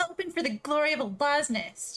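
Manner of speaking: haughty, nasty, mean, snooty tone. Saying a taught phrase in character as instructed: mean, snooty. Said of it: "but in a mean, snooty way".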